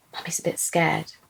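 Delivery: whispering. A mother retelling what she said in her son's ear, whispered. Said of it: "I whispered to him".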